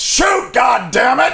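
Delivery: very high, loud shout.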